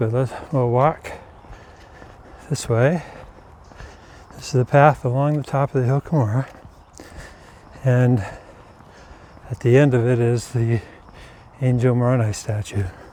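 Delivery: slightly winded, a little out of breath. Having just walked up to the top of the hill, a little out of breath. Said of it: "so I'm a little bit out of breath".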